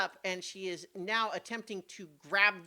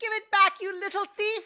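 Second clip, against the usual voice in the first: very high, shrill shout; 13 semitones higher, 9 dB louder than usual. A narrator voices someone in a market crowd crying out at a thief; shrill cry. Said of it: "A shrill voice cries out".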